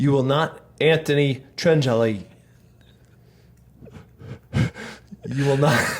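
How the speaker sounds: slow speech, fighting back laughter. Repeating a challenge to the camera when asked, can't keep a straight face. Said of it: "I can't say it with a straight face".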